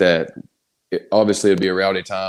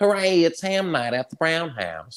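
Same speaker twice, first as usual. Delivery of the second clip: very high, squeaky, swooping, sing-song cartoon voice; 10 semitones higher, 3 dB quieter than usual. Giving an example of an old impression: Cleveland Brown impression. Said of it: "Cleveland Brown".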